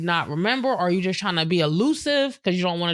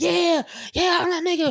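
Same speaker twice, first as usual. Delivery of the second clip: mock hype shouting and screaming, higher; 11 semitones higher than usual. Mocking hype talkers who excite gullible people: imitating hype yelling and screaming. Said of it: "all that yelling and screaming".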